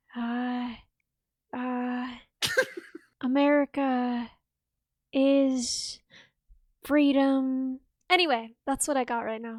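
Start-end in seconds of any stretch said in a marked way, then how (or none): 0.1-7.8 very slow, hesitant, dragging rambling, stumbling on uhs. Joking about sounding like a politician: Joe Biden impression. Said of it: "doing a Joe Biden impression".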